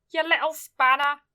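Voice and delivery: stern scolding, telling-off tone. Speaker retells what their mum called them, doing an impression of my mum. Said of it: "That's my impression of my mum".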